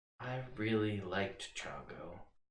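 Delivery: breathy airy voice. Voicing a spirit answering a summons: airy voice. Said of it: "an airy voice comes back".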